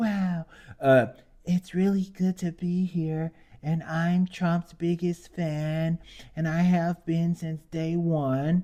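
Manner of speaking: put-on babyish, slow, high voice. Mocking a woman who got up and praised trump, in her babyish 'baby bop' voice. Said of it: "in her baby bop voice".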